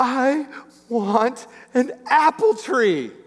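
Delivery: put-on crying child voice, high, dragged out very slowly. Retelling what a crying boy told his dad: imitating a crying child. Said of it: "he's just crying".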